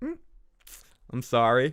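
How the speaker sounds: smug, self-satisfied, smarmy put-on tone. Acting out how he apologizes in those situations: mock-smug apology. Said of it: "with this smug douche".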